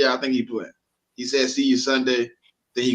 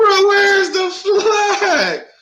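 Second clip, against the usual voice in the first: put-on screaming, higher and louder; 8 dB louder than usual. Retelling a play where no flag was called: retelling own past scream. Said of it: "I'm screaming like".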